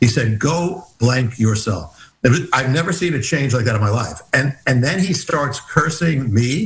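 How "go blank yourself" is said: put-on whisper, lower pitch. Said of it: "in a whisper".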